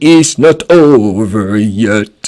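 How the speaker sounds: put-on big voice. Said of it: "Avec sa grosse voix".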